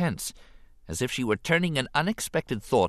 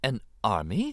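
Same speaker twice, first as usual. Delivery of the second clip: soft, gently surprised voice. Narrating her reply to a Gungan boasting of an army, in a soft surprised voice. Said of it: "a hint of surprise in her soft voice".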